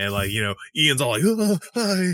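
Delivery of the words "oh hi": mock very high, jittery, excitable, hyperactive voice. Retelling what Ian said, imitating Ian as a hyperactive cat. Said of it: "He's like a hyperactive cat".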